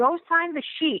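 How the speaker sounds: high yelled voice, acted out. Retelling yelling out the window to him: retelling own past yell. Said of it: "So I'm yelling out the window to him".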